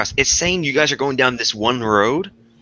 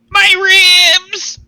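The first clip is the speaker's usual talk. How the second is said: very high, very loud, drawn-out dog-toy squeak; 8 dB louder than usual. Describing what he says, the speaker quotes him in a high-pitched voice. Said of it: "in this like high pitched voice".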